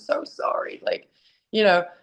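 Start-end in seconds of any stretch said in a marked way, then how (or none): 0.0-0.8 soft, tearful whisper while crying. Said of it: "I'm, like, crying to him".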